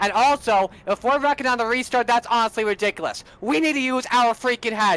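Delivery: mad, fed-up, heated ranting. Answering an interviewer after the restarts and yellows: angry ranting. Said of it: "I'm sorry that I'm mad at it".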